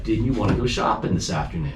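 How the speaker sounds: plain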